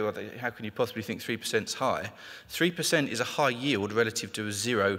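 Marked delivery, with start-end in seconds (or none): none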